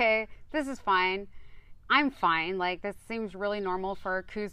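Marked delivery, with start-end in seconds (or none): none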